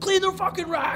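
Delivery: put-on very high, loud screaming voice. Retelling screaming orders at a kid while hustling, retelling his own screaming. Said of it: "screaming at him".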